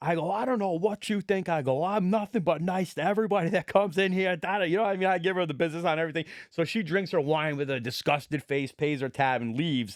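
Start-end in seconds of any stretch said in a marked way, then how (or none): 0.3-4.4 put-on angry outburst, higher pitch. Retelling how he lost his temper with a customer: imitating own angry outburst. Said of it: "I lose it on her".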